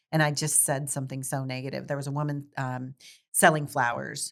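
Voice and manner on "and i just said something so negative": usual speaking voice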